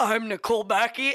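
stuffy, stuffed-up, blocked-up voice. Retelling slating a name at a commercial audition while hungover: imitating a stuffy voice.

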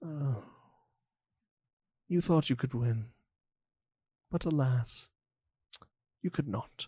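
soft voice full of great pity. Narrating a scene, the storyteller voices a man addressing a beaten opponent with great pity. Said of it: "with a great amount of pity in his voice".

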